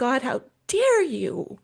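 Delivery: anguished, swooping, drawn-out angry cry. Retelling words thrown at God in a hard moment: retelling an angry outburst. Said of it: "you can imagine my anger, my anguish".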